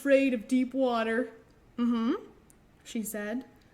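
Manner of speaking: ordinary delivery, nothing marked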